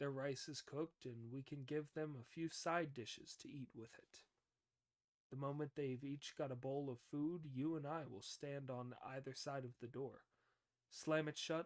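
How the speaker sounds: ordinary delivery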